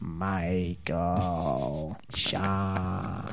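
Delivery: odd, otherworldly, put-on alien voice. Retelling how he says everyone's name, just in his ET voice. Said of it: "just in his ET voice. So you hear, like".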